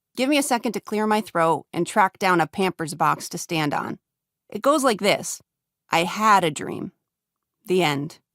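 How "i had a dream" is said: had hit hard, rest plain. Giving a one-line speech of their own, stress on had. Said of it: "Emphasis on the word had".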